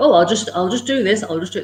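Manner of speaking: normal talking voice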